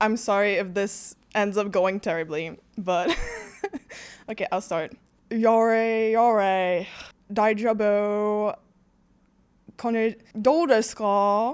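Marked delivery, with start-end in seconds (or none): 5.3-11.5 clumsy, bad French accent, very slow. In an accent guessing game, the speaker starts with a bad french accent attempt. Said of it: "I was trying to do the French one".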